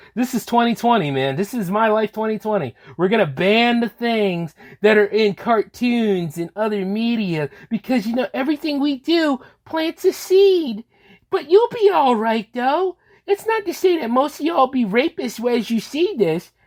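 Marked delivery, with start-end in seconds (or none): 8.3-16.4 put-on pitched-up, babying, condescending, patronizing tone. Speaking to the audience the way executives feel about them, in a mocking, coddling tone. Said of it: "in this mocking, coddling tone".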